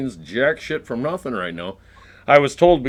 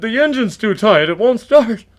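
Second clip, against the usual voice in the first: pitched-up, lame-sounding stock delivery; 8 semitones higher than usual. Mocking someone's stock excuse about a truck, the speaker does a Johnny impression. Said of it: "How would you do a Johnny?".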